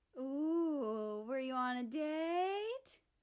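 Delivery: very slow high teasing, "ooh" stretched long. America to Germany, who says they were just hanging out, teasing. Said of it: "America teased with a smirk".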